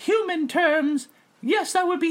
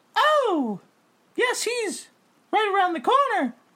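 high, obliging ghost voice, answering right away; 5 semitones higher than usual. Voicing the ghost Shirley answering a question: voicing the ghost Shirley. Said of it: "Hey, Shirley, where's Bing-".

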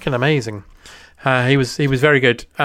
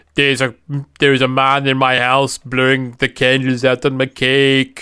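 comic, exaggerated French accent. Retelling what a man said, in an accidental Clouseau accent. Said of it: "That went Clouseau".

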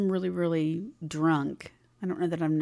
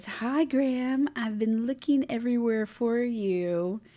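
put-on sloshy drunk voice, pitched up, drawn-out "you"; 7 semitones higher than usual. Retelling how a groupie approached on the tour bus: imitating sloshy drunk speech. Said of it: "kinda sloshy, and says".

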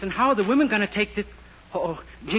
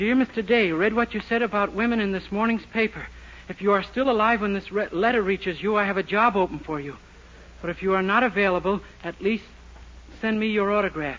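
ordinary delivery, nothing marked

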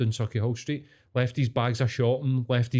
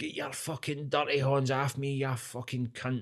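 put-on drunk old Scottish man voice, much quieter; 2 semitones higher, 7 dB quieter than usual. Retelling a scuffle between strangers, imitating a drunk old scottish man. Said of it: "a pissed up old Scottish guy".

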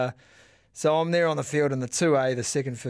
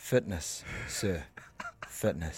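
half-whispered, breathy, gloating rub-it-in taunt; 7 semitones lower, 9 dB quieter than usual. Retelling what was said to the losing coach: retelling a gloating taunt. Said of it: "He rubbed it in, eh?".

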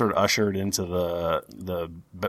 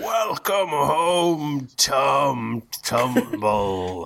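big booming voice, as over loudspeaker; 8 semitones higher than usual. A game narrator voices a loudspeaker greeting a returning character, booming loudspeaker voice. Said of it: "you hear a booming voice over the loudspeaker going".

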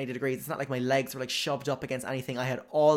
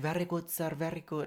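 soft, fumbling, attempted Irish accent; 4 semitones higher, 6 dB quieter than usual. Retelling a flight crew member's reply to his order, in a put-on accent. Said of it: "Whatever accent I'm trying to do".

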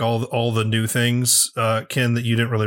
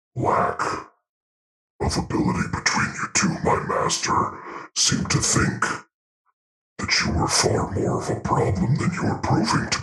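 disembodied voice coming from all around; 9 semitones lower than usual. Game master voices a master's servant speaking to two players: disembodied voice. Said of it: "Then you hear the air crackles, and all around you, you can just kind of hear you hear the voice again, and it tells you that".

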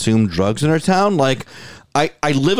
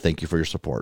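put-on hushed murmur, lower and quieter; 7 semitones lower, 9 dB quieter than usual. Retelling what the barista said when handing over the coffee: imitating someone speaking under her breath. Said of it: "she leaned in and under her breath said".

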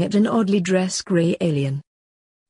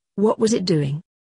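usual speaking voice

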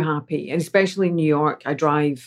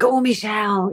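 encouraging, pitched-up cheer; 6 semitones higher than usual. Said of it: "He's just like".

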